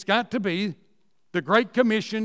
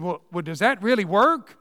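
put-on, very negative, sour tone. Retelling a question another pastor asked: imitating a very negative tone. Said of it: "he said in a very negative tone".

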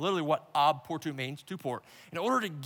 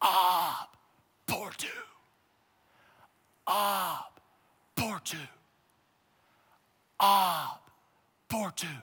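put-on captain voice, very slow, drawn-out, full-lung yell; 2 semitones higher than usual. Retelling how a boat captain stands up and calls out: imitating a captain yelling at the top of his lungs. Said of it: "at the top of his lungs, he yells".

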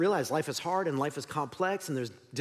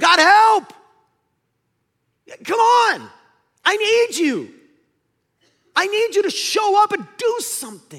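very high, loud, desperate, pleading outcry; 14 dB louder than usual. Acting out the psalmist crying out to god: imitating a desperate cry for help. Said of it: "And he's crying out".

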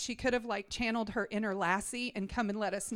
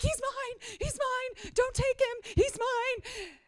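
very high, frantic, drawn-out, panicked pleading tone; 14 semitones higher than usual. Telling moms how they ran toward a teenager at the pharmacy: retelling past panic. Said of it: "and i am panicking okay".

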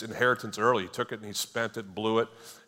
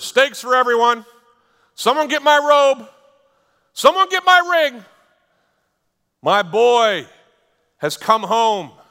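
very loud, high-pitched shouting; 14 semitones higher, 14 dB louder than usual. Speaker acts out the dad calling orders as his son comes home; retelling a yell. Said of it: "he starts yelling out orders".

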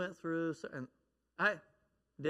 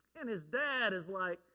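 normal talking voice

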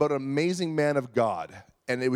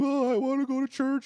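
put-on very high, whiny, tearful child's wail; 10 semitones higher than usual. Retelling how a little sister begged to go to church: imitating a crying child. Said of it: "she was crying".

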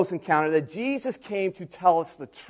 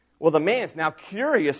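ordinary talk, nothing marked

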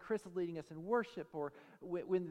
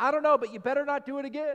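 put-on angry voice, higher and louder; 7 semitones higher, 12 dB louder than usual. Retelling a sermon story of a wife woken up angry: imitating someone mad. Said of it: "She was mad".

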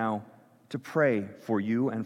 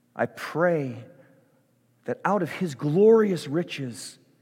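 slow, deliberate, prayerful reading tone. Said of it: "I'm gonna say it slowly".

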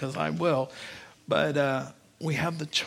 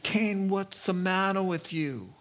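put-on thick Italian accent; 4 semitones higher than usual. Preaching on Genesis 4, voicing the Lord speaking to Cain: the Lord with Italian accent. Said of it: "the Lord had an Italian accent".

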